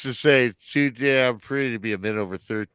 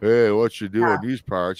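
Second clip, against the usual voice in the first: put-on, mock slow speech. Telling a story, the speaker mimics how the man did not talk, imitating slow talk. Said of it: "He didn't talk all slow and".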